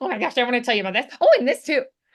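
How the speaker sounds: put-on rushed, rattled-off, excited, eager little kid voice. Showing a learner how the character talks: excited like a little kid. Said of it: "like an excited little kid".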